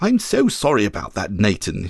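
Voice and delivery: low, indistinct mumble. A man apologizes to nathan after just stopping the dog in time; mumbled. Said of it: "he mumbled".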